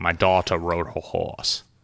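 rough, put-on attempt at British accent. Demonstrating a personal trick for doing accents, British accent. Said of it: "if I want to do a British accent".

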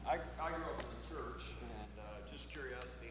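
muffled, as through a muted mic.

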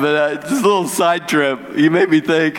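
speaking through laughter. Apologizing for laughing and starting a side story, laughing while talking. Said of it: "I'm sorry I'm laughing".

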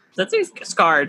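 ordinary talk, nothing marked

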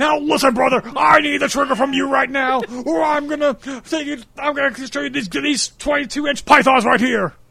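very high-pitched voice sounding like talking underwater. Riffing on a comparison just made: Hulk Hogan voice. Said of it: "he sounds like Hulk Hogan underwater".

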